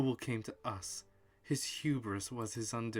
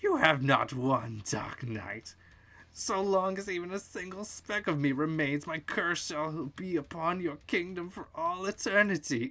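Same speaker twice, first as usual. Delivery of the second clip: high, loud, crazed, cackling voice; 6 semitones higher, 5 dB louder than usual. Narrator voicing the Grey Wizard as he fades into dust, cackling madly. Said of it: "cackling madly".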